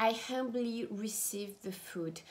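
ordinary talk

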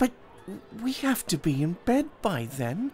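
hesitating. Narrator reads the reply to a man's offer, hesitant. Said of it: "said Jack, hesitantly".

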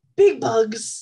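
loud screaming, in character. Voicing a character warning another about huge bugs: in-character scream. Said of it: "I scream".

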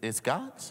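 rising, questioning lift at the end of God's. Preaching about money, echoing a listener's doubt: questioning rise on God's. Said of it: "somebody had a question mark on it".

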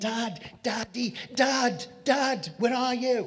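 put-on high, drawn-out, anguished, desperate cry. Retelling a desperate cry to his father: imitating his own desperate screaming. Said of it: "I was screaming".

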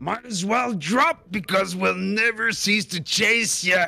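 shrill, intimidating, high, fast scream. A tabletop player makes an intimidation check in character: screaming. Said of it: "I'll scream".

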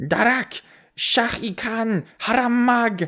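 very high, shrill, squealing imp cry. A narrator reads a fight scene, voicing the imp's cry as a squealing imp. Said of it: "the imp squeals".

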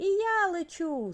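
very high, shrill shout. Zavr, lifted into the air by a fountain, shouting. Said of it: "закричав Завр".

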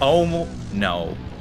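normal talking voice

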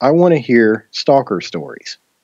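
plain

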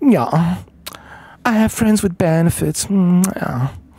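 fake, scheming, manipulative put-on voice. Mocking how some people talk, in a phony, manipulative voice. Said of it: "phony, manipulative voice".

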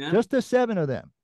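shrill, very high-pitched shouting yell. Arguing in a party meeting over who sees the agenda, yelling. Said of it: "You're yelling".

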